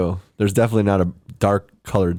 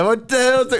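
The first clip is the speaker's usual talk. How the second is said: put-on Italian accent, higher pitch. Showing the only accent he can do: weird Italian accent. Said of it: "weird Italian".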